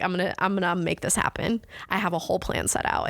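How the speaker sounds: ordinary delivery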